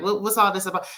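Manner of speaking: normal talking voice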